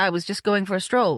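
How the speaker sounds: ordinary delivery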